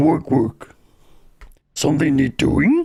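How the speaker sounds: animated voice with pitch swooping up and down. Sharing favorite Warcraft quotes, doing a Warcraft peon impression. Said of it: "That's my um peon impression".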